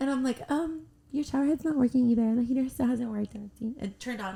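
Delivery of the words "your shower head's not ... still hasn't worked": put-on, quick, sweet little innocent voice. Recounting a conversation with her: retelling a mock-sweet innocent voice. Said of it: "with my sweet little innocent voice".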